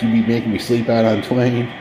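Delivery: ordinary talk, nothing marked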